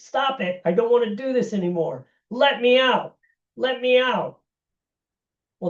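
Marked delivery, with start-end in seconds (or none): 0.0-4.4 high, screaming voice. Retelling a study subject begging to stop: imitating someone screaming. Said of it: "the person starts screaming".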